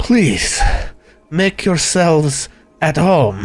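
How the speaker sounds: shaken, rattled voice after a shuddering breath. Voicing a blanched burgomaster, after a shuddering breath: shaken. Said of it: "a deep shuddering breath".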